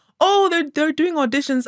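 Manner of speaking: high, loud, eager, excited chatter, blurted out.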